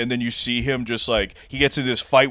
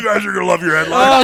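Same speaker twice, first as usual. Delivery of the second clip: mock-furious rant at a faster pace; 7 semitones higher, 5 dB louder than usual. Retelling what Richard said after going totally berserk; Richard going berserk, retold. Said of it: "he goes totally berserk".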